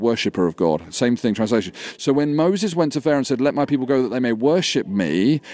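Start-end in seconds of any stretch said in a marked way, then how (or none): none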